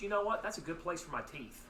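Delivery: ordinary talk, nothing marked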